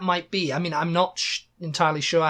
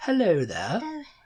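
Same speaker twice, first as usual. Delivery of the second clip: terribly posh, plummy English accent, royal-sounding. Discussing how everybody supposedly talks, a speaker greets in a posh accent like the Queen. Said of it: "Talks like the Queen".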